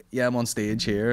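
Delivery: normal talking voice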